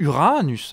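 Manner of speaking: Uranus with stress on the second syllable's a. Listing planets and their satellites, stress on the a of uranus. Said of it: "avec le A accentué".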